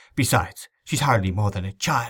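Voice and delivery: ordinary delivery, nothing marked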